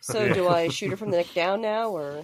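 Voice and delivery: ordinary talk, nothing marked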